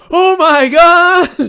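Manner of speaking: acted very high, very loud shriek, "God" drawn out. Retelling a character spotting a giant turkey leg: imitating an overjoyed exclamation. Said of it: "She's, like, overjoyed".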